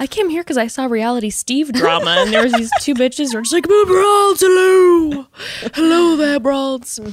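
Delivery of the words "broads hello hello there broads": put-on old man voice, high and slow. Host voicing first-time Bachelor News viewers; old man voice. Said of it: "talking in like our old man voices".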